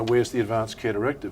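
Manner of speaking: ordinary delivery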